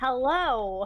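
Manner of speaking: over-sweet, cheesy, fake-friendly put-on tone. Greeting wary strangers in character: cheesy fake-friendly greeting. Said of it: "with the cheesiest fake smile that I can".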